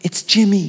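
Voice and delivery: put-on tiny, small voice of a four-year-old child. Telling a story of a pastor's phone call, imitating a small quiet voice. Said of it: "The quiet voice said".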